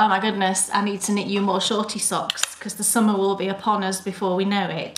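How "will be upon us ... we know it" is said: normal talking voice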